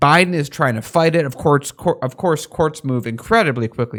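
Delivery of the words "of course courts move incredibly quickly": normal talking voice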